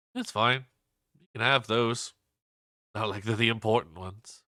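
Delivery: gentle, soft tone with no edge. Voicing a character's reply during a game scene: softly spoken. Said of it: "softly says".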